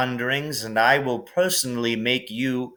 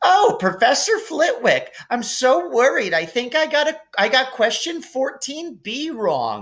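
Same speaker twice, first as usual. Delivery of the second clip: very high, put-on teasing, mocking sing-song voice; 12 semitones higher than usual. Reading a story aloud, a boy teasing a friend: mocking high voice. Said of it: "He put on a high voice".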